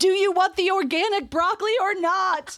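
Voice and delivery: very high, shrill, drawn-out acted yell. Retelling how an app yells at them: imitating Instacart yelling. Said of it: "that's yelling at me like".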